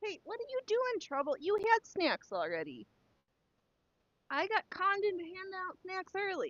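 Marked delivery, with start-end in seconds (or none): 0.0-1.0 loud shout. Telling the ones fighting down there to stop, yelling. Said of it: "because I'm yelling like literally".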